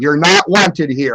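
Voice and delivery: full-voiced, resonant voice sounding like a football coach. Retelling how he sounds when blessing a house: like a football coach. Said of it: "I sound like a football coach".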